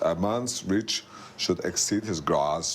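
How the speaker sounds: slow, clumsy put-on voice. Quoting a line Arnold Schwarzenegger said: Arnold Schwarzenegger impression. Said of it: "so it sounds like I can't do Arnold Schwarzenegger".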